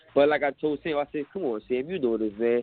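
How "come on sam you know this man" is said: low, mock, lightly sarcastic ribbing. Retelling what he said after Sam asked his fight weight, retelling a sarcastic jab. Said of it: "like in a little sarcastic way".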